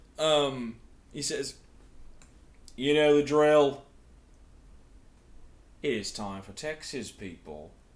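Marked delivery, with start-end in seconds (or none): 2.8-7.7 very loud, belted put-on Australian accent. Quoting what a man says, in an australian accent. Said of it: "it's gonna go Australian".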